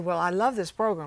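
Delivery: ordinary delivery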